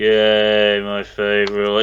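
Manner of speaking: imitated lifeless flat delivery. Mocking the other speaker's attempt at sounding sincere, mocking someone's flat monotone. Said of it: "You literally sounded like that".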